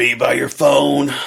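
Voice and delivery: loud, slow, stage pirate-like voice. Retelling what one of the clowns said when checking up, in a pirate-like Rich Chamberlain voice. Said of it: "Is that in a pirate voice?".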